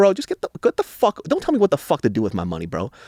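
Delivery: mock-irritated outburst, put-on anger. A father retells snapping at a man over his money; retelling an irritated outburst. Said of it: "I'm like irritated right now".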